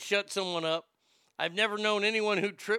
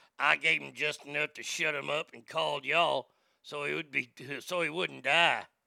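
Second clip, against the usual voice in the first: put-on trashy voice, much lower; 5 semitones lower than usual.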